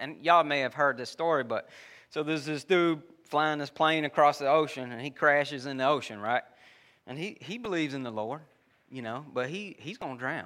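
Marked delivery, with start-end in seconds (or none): none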